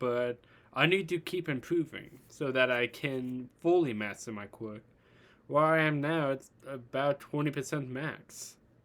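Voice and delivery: plain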